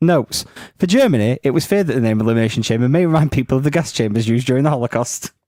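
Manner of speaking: ordinary talk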